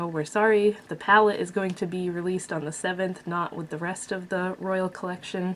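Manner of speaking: ordinary talk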